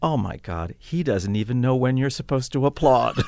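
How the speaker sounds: very loud, high-pitched, carrying across the whole room. Conductor retells what a woman who won't stop applauding said, very loud voice. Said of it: "she said in a very loud voice".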